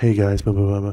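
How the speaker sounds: soft, hushed, secretive stage whisper, close to mic. Retelling how another streamer sounds on stream: imitating someone half-whispering into mic. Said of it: "he whispers into the mic".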